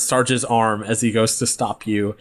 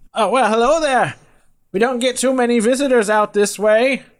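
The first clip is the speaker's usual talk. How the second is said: shouting out loudly; 12 semitones higher than usual. A game master voicing a man with a hound dog, yelling out to the group. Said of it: "He yells out to the group".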